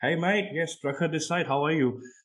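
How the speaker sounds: put-on Aussie-style Australian accent. Retelling answering a caller the way Australians talk: retelling own Australian-style greeting. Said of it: "he wasn't speaking like that".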